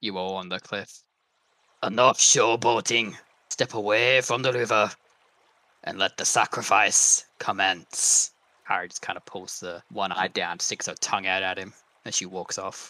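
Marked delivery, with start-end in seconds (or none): 0.0-8.3 cranky, disgruntled, grumpy voice. Narrating a scene, a voice calls down from above to those on the cliff, grumpy. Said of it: "darn grumpy voice from above".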